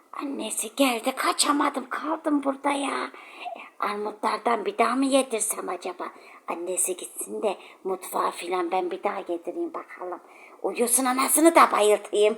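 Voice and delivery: very soft, low, hushed muttering witch voice. A witch speaking while Enes and Azra hear her, witch voice. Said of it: "Cadının sesi bu".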